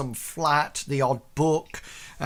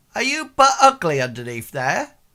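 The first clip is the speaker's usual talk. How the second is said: loud, sing-song, put-on little girl voice; 2 semitones higher, 5 dB louder than usual. Voicing a little girl who refuses a candle: acting as a little girl. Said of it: "She says".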